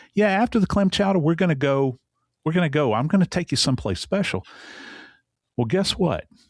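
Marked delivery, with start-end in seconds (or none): 0.2-4.5 put-on distinct New York accent, pitched up. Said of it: "in his voice that's distinctly New York".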